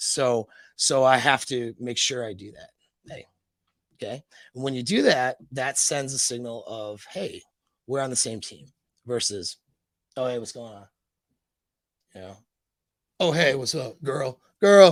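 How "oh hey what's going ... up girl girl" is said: creepy, menacing, sinister voice. Contrasting with a friendly greeting, greeting a girl in a creepy menacing way. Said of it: "this guy's gonna kill me in a parking lot".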